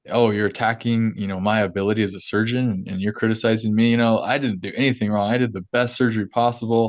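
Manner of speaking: ordinary talk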